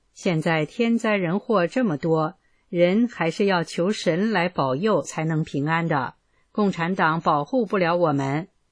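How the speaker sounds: ordinary talk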